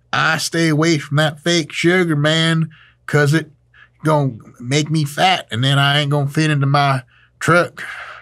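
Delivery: put-on Southern accent. Comedian voicing people who avoid fake sugar, in a put-on Southern accent. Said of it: "trying on a good old Southern accent".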